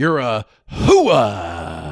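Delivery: loud, swooping, derisive, belted, hooah stretched out. Showing an impression of Al Pacino in Scent of a Woman. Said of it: "Al Pacino in Scent of a Woman being derogatory".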